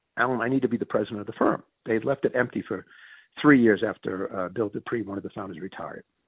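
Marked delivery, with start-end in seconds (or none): none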